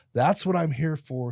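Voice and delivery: loud, high-pitched screamed yell. Retelling spinning around at first base after a big hit, retelling a scream. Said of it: "I spun around and I screamed".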